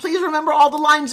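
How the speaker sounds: mock-panicked voice. Recalling a first live TV appearance, the speaker acts out freaking out. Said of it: "I'm freaking out".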